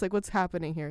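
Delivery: ordinary delivery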